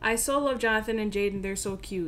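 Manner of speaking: ordinary talk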